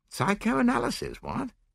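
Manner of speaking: startled, alarmed outburst at a very high pitch. A man reacts to a proposed experiment on his subconscious, alarmed. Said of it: "with visible alarm".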